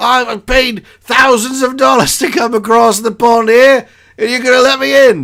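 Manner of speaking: horrible put-on English accent, squeaky and very high. Retelling a guy without a wristband demanding to be let in, horrible English accent. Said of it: "the guy's a horrible English accent".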